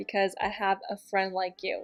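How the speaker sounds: ordinary delivery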